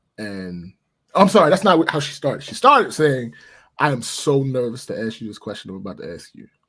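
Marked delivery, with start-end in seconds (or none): none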